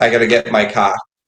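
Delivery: Boston accent, R sound dropped in "car". Showing how people in boston drop the letter r: boston accent. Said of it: "So a Boston accent is like".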